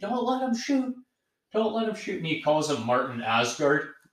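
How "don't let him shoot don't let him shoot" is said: very high, frantic, repeated shrieking. Describing a clip of a man watching a football game, retelling a scream. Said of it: "starts screaming".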